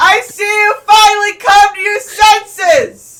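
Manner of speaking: very high, very loud, gleeful, far-carrying yell. Voicing Feynman calling over to a ship that has come closer: Feynman yelling across. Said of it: "Why are you yelling?".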